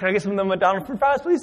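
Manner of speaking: frantic, needy, fast and desperately craving tone. Retelling begging at a counter for fries: imitating own desperate craving. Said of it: "I was like a crackhead".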